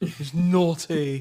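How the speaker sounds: put-on British accent. Joking with co-hosts about naughty words, speaker slips into a mock British accent. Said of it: "I like how you guys turned British".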